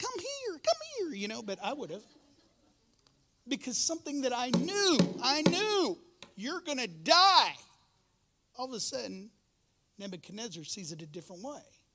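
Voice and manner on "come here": squeaky cartoon voice, much higher. Acting out a man's call to come here, in Mickey Mouse voice. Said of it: "I don't know if he went to Mickey Mouse voice".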